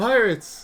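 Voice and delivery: high, loud, mock over-excited trailer announcer voice. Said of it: "He sounded very enthusiastic".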